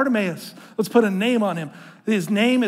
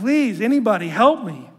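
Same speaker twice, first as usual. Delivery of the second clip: mock, begging, crying-out plea. Retelling the story of a blind man in a crowd, imitating a blind man crying out. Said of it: "he's crying out, like".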